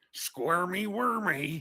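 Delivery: put-on gruff, tough, accented voice. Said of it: "just that gruff, tough voice".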